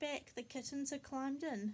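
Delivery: ordinary delivery, nothing marked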